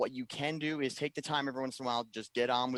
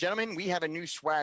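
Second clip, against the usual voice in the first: squeaky, high voice like sucking a helium balloon; 6 semitones higher than usual. Reading out a Slack conversation to others and voicing one participant, in a Bennett on helium voice. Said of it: "sounded like Bennett sucking on a helium balloon".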